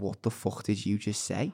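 put-on Scouse accent. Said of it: "he was a Scouse guy".

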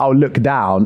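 ordinary delivery

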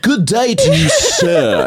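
put-on very high, slow, drawn-out, swooping, theatrical English accent. Describing high school theater kids, imitating Jeff's English accent. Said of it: "I think I'm going to do an English accent".

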